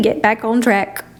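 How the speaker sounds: ordinary talk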